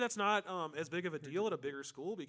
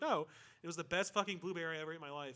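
ordinary delivery

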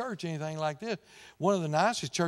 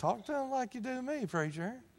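high, soft, grumbled mutter under the breath; 8 semitones higher, 5 dB quieter than usual. Retelling a grocery store moment with his wife: imitating wife mumbling under her breath. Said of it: "she'll mumble under her breath".

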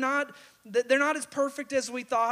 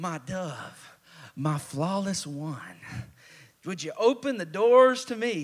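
deep, low, honeyed lovey-dovey sweet talk; 7 semitones lower than usual. Retelling how a husband comes in late to his sleeping wife: put-on sweet talk. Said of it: "He's doing some sweet talk".

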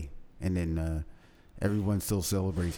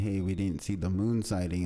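ordinary talk

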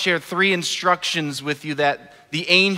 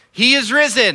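loud, high-pitched yelling; 6 semitones higher, 5 dB louder than usual. Leading the crowd in a call and response, the speaker is yelling out. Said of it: "I'm going to yell out".

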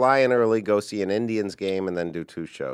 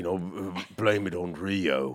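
put-on low, soft Cockney voice. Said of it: "That's like Michael Caine on steroids".

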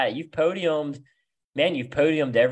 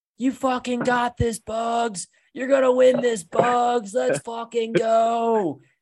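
mock, drawn-out, very high drunken top-of-lungs shriek; 10 semitones higher, 3 dB louder than usual. Retelling a wasted fan cheering on Bugs, imitating a fan screaming. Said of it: "he was screaming at the top of his lungs".

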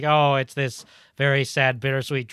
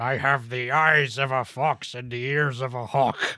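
very slow dwarf warrior voice, every word drawn out. Imagining a film character wandering the restaurant: Gimli voice. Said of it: "Gimli just wandering around going".

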